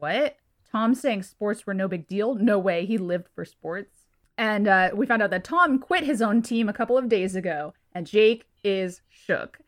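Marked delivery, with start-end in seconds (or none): none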